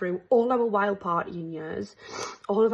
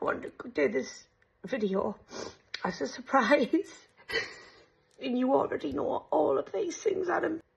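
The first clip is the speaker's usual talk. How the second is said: high voice on the verge of tears; 5 semitones higher, 4 dB quieter than usual. Speaker surprising Adam with a video made for him: on the verge of tears. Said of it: "I just think I'm gonna start crying".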